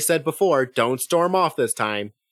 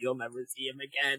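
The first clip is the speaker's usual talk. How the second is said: put-on hushed chuckle, very soft, laughing through words; 13 dB quieter than usual. Retelling what the author said about a character: imitating someone laughing while speaking. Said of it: "and then laughed as he said".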